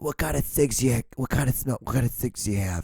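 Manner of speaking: put-on heavy smoker voice. Joking about a worn-out voice, putting on a heavy smoker voice. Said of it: "that's kinda what I sound like".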